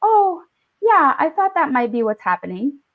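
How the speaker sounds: calm, matter-of-fact voice. Retelling the mother walking in on a panic in the bathroom: imitating mother speaking calmly. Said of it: "My mother walked in all calmly and was like".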